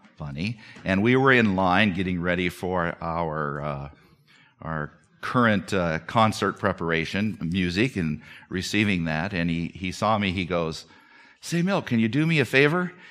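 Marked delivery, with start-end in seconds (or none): 11.4-12.9 mock bright, joyful, rapid tone, pitched up. Retelling a man in line asking you a favor, imitating him joyfully and quickly. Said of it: "he said it so joyfully and quickly".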